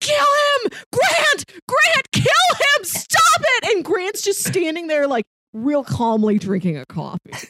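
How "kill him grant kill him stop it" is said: put-on very high, stretched-out scream at the top. Describing the bumper at the end of an episode, retelling AJ's screaming. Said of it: "screaming like".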